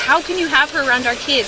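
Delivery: ordinary delivery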